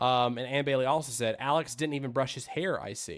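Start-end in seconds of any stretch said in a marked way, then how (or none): none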